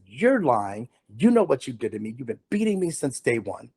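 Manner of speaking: reenacted angry, anguished outburst. On the witness stand, the speaker confronts the man who beat him, retelling an angry outburst. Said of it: "sixteen years of pain and anger".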